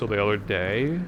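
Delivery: rising uptalk pitch at the end on "day". Imitating how people from california upspeak, pitch rise on final day. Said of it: "and upspeaking things. Be like".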